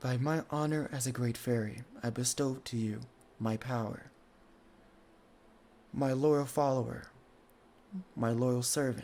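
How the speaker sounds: booming, echoing, resounding voice. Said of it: "her words echoing through this".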